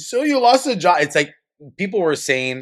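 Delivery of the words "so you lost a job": very high, shrill, scornful and dismissive yelling. Retelling a man's response to a young woman's TikTok, imitating a man yelling. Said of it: "he's like yelling".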